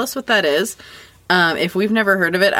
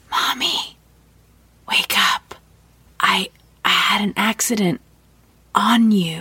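put-on slow, hushed little-child whisper. Retelling how a four-year-old son woke her up: imitating a toddler whispering. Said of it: "started whispering".

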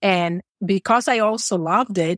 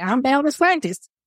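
put-on tiny, squeaky, high small-child little-girl voice; 6 semitones higher than usual. Recalling an Instagram video from when they were very little, imitate Bella's squeaky voice. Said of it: "Bella with her squeaky voice".

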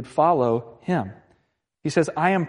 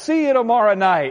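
put-on sportscaster voice, higher and louder; 6 semitones higher, 5 dB louder than usual. Retelling the broadcast of a walk-off home run: imitating Joe Buck's call. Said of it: "Joe Buck is just this classic. He's like".

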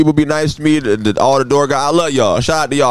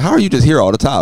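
usual speaking voice

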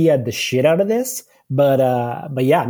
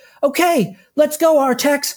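chipper, high, upbeat heroic voice. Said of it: "he's like".

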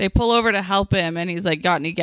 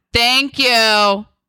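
overly aggressive, loud delivery; 3 semitones higher, 5 dB louder than usual. Discussing a scene, the speaker mimics Natalie thanking the kids, imitating Natalie's aggressive thank-you. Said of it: "the way she says thank you is like so aggressive".

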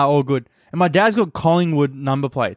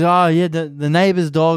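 put-on slow broken-English Italian accent; 2 semitones higher than usual. Retelling what a woman said about the neighbor's dog; broken-english italian accent. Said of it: "in like broken English Italian accent".

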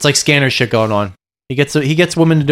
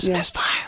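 hushed, breathy whisper under the breath; 4 semitones higher, 11 dB quieter than usual. Retelling a movie scene where a character is overheard: imitating someone whispering. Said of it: "Atkins hears him whisper".

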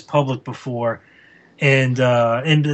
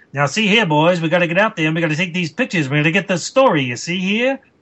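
put-on fast, rattled-off nineteen-thirties old-time newsman patter; 3 semitones higher than usual. Show how Ed walks around the office talking, imitating Ed's 1930s newspaperman talk. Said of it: "walks around the office talking like this".

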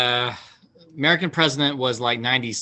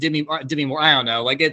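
ordinary talk, nothing marked

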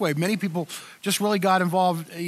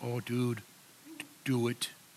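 put-on drawn-out Canadian accent, very slow; 8 semitones lower, 11 dB quieter than usual. Retelling David's reply about the new church name: imitating David's Canadian accent. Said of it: "that's the best Canadian accent I can do".

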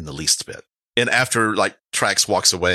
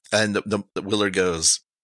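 plain

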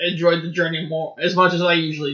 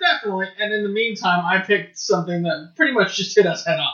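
ordinary talk, nothing marked

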